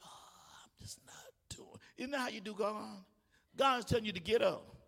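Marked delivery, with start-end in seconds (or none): 0.0-1.8 slow, breathy, hushed, pitiful whisper, sickly voice. A speaker mocks how people sound calling in sick: mock-pitiful slow sick voice. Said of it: "you talk slow".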